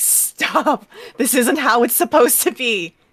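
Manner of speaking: very loud, high-pitched growling voice. Narrator voices a character growling at Prishka, in a growl. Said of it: "she growls at Prishka".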